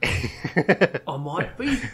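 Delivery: high, put-on East London Cockney accent. Acting out a reply from a story: cockney accent. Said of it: "In a Cockney, Cockney accent".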